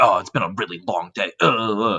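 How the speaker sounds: unhappy, grumbling mutter to himself. Retelling how a wealthy customer complained: imitating a customer muttering. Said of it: "He was muttering like".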